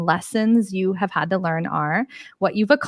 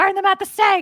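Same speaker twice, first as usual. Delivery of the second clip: fake-angry ranting, very high-pitched; 12 semitones higher than usual. Acting out how people usually react, mock-angry Muppet voice. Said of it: "sometimes you sound like a Muppet, a very angry Muppet".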